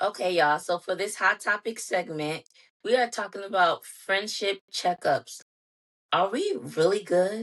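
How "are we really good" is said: doubtful, uneasy, ominous tone. Host introducing a hot topic segment on friendship checkups, in a doubtful, ominous tone. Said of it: "Even the tone that I just said it in, said it in is like, are we even still friends?".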